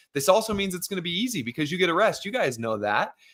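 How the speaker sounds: mock thick, knowing sarcasm, swooping and high. Retelling own remark about an interval workout: imitating own sarcastic remark. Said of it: "very sarcastically are like".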